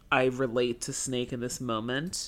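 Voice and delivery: ordinary talk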